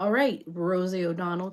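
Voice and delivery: ordinary talk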